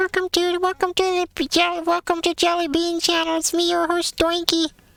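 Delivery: cute, very high-pitched puppet voice. [name] introduces herself as host of the channel, in a cute, funny Doinky voice. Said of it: "that's a cute and funny voice".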